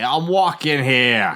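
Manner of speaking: very loud, high-pitched New York accent. Asked by another speaker to give a New York accent; New York accent. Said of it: "Give us a New York accent".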